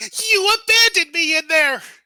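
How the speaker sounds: high, drawn-out furious scream. Recapping a scene, a woman pulls away and hits a man: screaming out. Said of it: "she screams out like".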